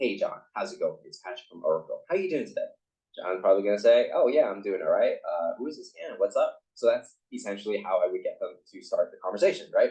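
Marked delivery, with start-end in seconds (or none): 0.0-2.7 calm, assertive, a little soft, energy underneath. Demonstrating how to open a call to John, calm but with some energy. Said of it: "My voice is kind of calm, but there's some energy to it".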